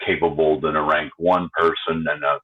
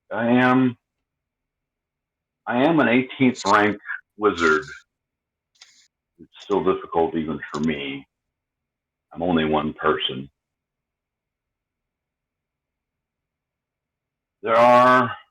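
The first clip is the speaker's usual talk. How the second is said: lowered voice, slight whisper; 4 semitones higher than usual. Narrating a wizard character speaking while he casts a spell, in a lowered whisper. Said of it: "lowers his voice and whispers a little bit".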